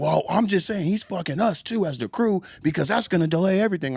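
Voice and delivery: put-on shrill, very high, ranting scream. Retelling what the guy in charge of the crew said: imitating someone screaming. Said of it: "why you're screaming at me".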